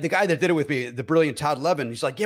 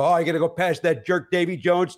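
ordinary talk

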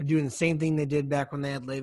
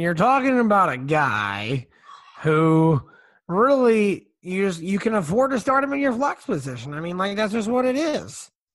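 sloppy put-on voice, drawn out, high and loud; 5 semitones higher, 6 dB louder than usual. Giving a fantasy start pick, doing a shitty Chris Collinsworth impression. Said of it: "my Chris Collinsworth impression is probably shitty".

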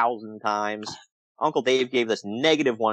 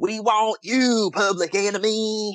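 very high-pitched put-on Southern accent; 9 semitones higher than usual. Quoting what he heard shouted at the match, in a fake southern redneck accent. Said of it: "I heard the redneck accent again".

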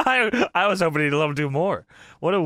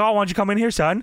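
goading, baiting wrestling villain taunt. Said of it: "doing heel stuff on the mic".

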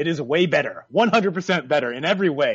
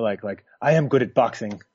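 put-on suave British accent, pitched much lower; 8 semitones lower than usual. Imagining Anthony Joshua after the fight, in a very suave British accent. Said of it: "in that very suave British accent".

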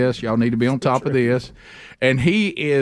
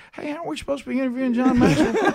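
mock-sleepy voice, much higher pitch; 12 semitones higher than usual. Retelling a moment with Bubba, imitating Bubba's sleepy voice. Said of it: "with that same voice, a little bit sleepy".

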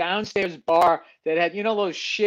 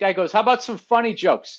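ordinary delivery

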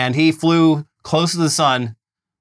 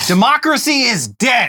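fired-up, mock rally-speech delivery. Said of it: "I got a little fired up there".

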